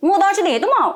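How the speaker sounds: lively, very high-pitched and loud. Redoing a subtly spoken line, this time with fast, lively delivery. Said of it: "अब इसको अगर थोड़ा-सा live फटाफट कर दें, तो कैसे होगा?".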